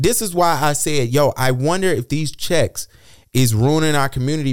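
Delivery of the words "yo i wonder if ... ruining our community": ordinary talk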